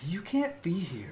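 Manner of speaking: strange, weird echoing voice. Telling a story, voicing the ghosts speaking to the housekeeper, in a weird echoey voice. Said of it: "like in that weird echoey voice".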